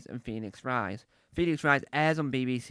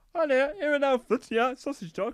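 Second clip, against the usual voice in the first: very high-pitched talking dog voice; 13 semitones higher, 4 dB louder than usual. Recalling a tv advert, the speaker does the sausage dog; sausage dog impression. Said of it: "This is my impression of a sausage dog".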